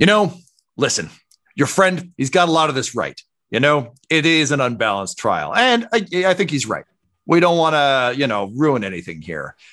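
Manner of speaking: loud, bold turtle lady voice.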